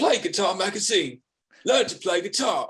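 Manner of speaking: bad put-on British accent. Speaker recalls a British TV ad for a guitar magazine, terrible British accent. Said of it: "forgive me for my terrible accent".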